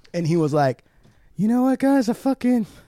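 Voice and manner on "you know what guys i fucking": put-on heavy, hard breathing. Retelling what someone said in a video: imitating someone breathing hard. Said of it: "breathing all hard".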